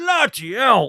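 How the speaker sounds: put-on strong Cockney accent. Retelling what a chap said on entering the loo: imitating Bubble's Cockney accent. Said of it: "with a right old Cockney accent".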